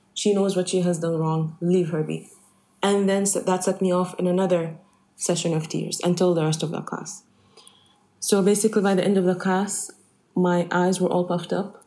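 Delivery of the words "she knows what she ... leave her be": ordinary delivery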